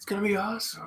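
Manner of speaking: soft, cheerful, happy whispery voice. Describing a man's trademark voice, speaker imitates him in a happy whisper. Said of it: "He's always like got that happy whisper voice".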